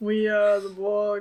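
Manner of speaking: flat, monotone robotic alien voice. Two speakers describing how the Borg talk, monotone Borg voice. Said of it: "It's very monotone voice".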